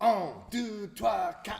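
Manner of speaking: awful, high-pitched, put-on French accent. Counting off a Flemish dance by tradition: absolute worst French accent. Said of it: "counting it off in his absolute worst French accent".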